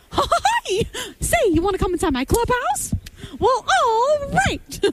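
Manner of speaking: high, swinging pitch. A mother shows how her kid makes her talk to him, Mickey Mouse voice. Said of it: "my kid has been making me speak to him like Mickey".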